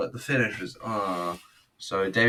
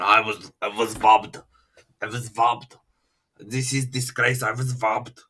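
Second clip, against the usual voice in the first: loud, garbled, unintelligible ranting at raised volume; 2 semitones higher, 5 dB louder than usual. Retelling a wrestler's complaint after a match: imitating Nikolai Volkov. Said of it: "Then Nikolai Volkov comes in, speaks unintelligibly, going".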